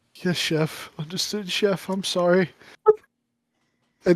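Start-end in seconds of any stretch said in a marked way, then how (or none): 0.2-2.5 acted near-tears voice, quieter. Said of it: "he's almost, like, crying".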